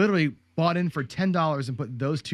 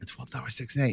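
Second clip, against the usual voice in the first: hushed, soft, under-the-breath whisper; 2 semitones lower, 5 dB quieter than usual. Retelling placing bets timidly at the table corner: retelling a whispered bet. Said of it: "I remember whispering".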